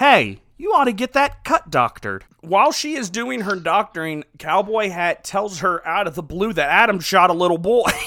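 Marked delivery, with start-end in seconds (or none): 0.0-2.2 sing-song, put-on Ohio accent. Showing how somebody in Ohio would say this line, in a put-on Ohio accent. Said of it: "they speak in Ohioan accents too".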